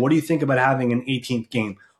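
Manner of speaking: plain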